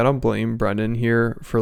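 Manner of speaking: plain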